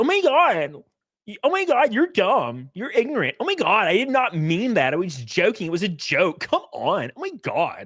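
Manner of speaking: put-on high-pitched valley girl talk with big swooping pitch. Mocking how Hasan talks when backed into a corner, Hasan as a valley girl. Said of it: "starts talking like a valley girl".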